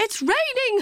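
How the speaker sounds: very high cried-out exclamation. The teacher cries out as the classroom roof lifts off. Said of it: "cried the teacher".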